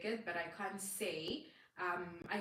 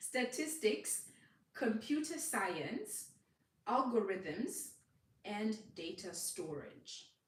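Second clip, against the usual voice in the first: speaking slower, a little to much slower pace; 3 semitones higher than usual. Speaker listing topics for viewers to write down, speaking a little slower. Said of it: "I'm going to speak a little bit slower".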